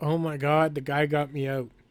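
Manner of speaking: ordinary talk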